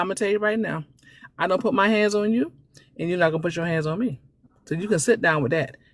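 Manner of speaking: put-on, even, steady, calm, firm, in-charge tone. Retelling how he answered a threat of a smack, in a real calm voice. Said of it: "He said in a real calm voice".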